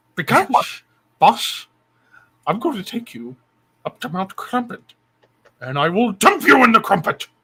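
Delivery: sneering, grumpy voice pitched high. Sending Boss a Discord invite, the speaker addresses him in a Grinch voice. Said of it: "Why do I sound like the Grinch".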